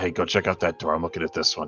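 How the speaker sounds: spoken in a whisper. Speaking in character to a party member: whispering. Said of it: "I just whisper to Lena".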